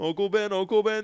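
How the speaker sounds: high, loud, with identical intonation both times.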